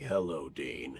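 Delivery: very deep, soft voice. Recalling the voice he used for his role, very deep Castiel voice. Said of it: "the my Castiel voice".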